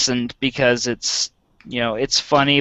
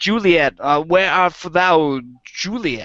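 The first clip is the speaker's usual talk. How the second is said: put-on halting actor voice, higher pitch; 5 semitones higher than usual. Showing Christopher Walken reading Shakespeare: Christopher Walken reading Shakespeare. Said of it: "Christopher Walken, like, reading Shakespeare".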